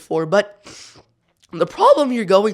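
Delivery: voice breaking and cracking mid-phrase. Speaker addressing viewers mid-explanation, voice cracking. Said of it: "what a voice crack".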